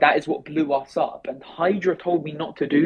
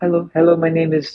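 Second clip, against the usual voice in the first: put-on assumed Filipino accent; 3 dB louder than usual. Retelling how he talked while running a project, in a put-on Filipino accent. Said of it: "I like put on a Filipino accent".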